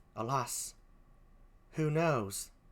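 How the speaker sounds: very quiet, hushed, badly done British accent. Performer continues a scene, voicing the character Emilia, poor British accent as Emilia. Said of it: "please forgive my poor British accent".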